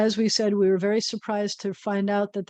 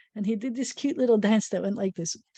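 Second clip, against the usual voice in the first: plain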